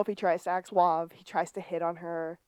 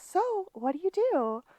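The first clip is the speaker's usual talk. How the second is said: put-on little girl voice, pitched very high; 12 semitones higher than usual. Retelling how someone asked himself questions: little girl voice. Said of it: "Sean in his little girl voice goes".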